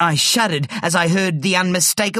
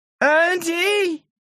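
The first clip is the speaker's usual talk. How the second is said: very high, long, drawn-out calling out; 12 semitones higher than usual. A man searching for the hidden narrator calls out to him. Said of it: "he called".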